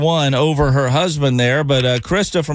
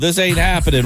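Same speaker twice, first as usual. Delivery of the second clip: plain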